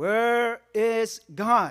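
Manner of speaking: put-on, loud, very stern, severe tone. Telling a story, the speaker acts out the pastor asking the boy again, even sterner. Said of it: "even sterner this time".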